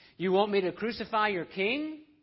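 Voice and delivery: high, loud mocking taunting jeer. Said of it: "Mocking Jesus".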